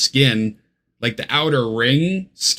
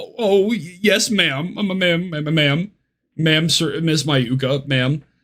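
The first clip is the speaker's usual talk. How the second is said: groveling, cowering, stammering, tripping over the words; 3 semitones higher than usual. Retelling an own flustered reply to a stern judge: imitating a cowering reply. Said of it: "He was cowering away".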